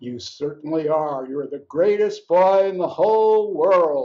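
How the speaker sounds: gently teasing, slightly mocking, hammed-up burlesque tone. A father lifts up his child and speaks to him in a slightly mocking tone. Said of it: "in a slightly mocking tone of voice".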